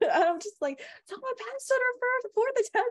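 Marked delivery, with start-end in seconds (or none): 1.1-2.9 put-on screaming, much higher pitch. Recounting announcing news to family at dinner, retelling a scream. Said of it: "And I'm like screaming to my family".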